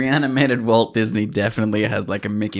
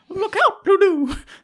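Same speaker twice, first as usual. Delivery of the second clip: very high animated-doll voice; 4 dB louder than usual. Voicing Mickey Mouse charging in a mech suit, in a Mickey Mouse voice. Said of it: "I find Mickey Mouse's that voice so unsettling".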